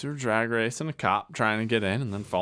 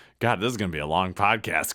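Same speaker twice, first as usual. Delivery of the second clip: plain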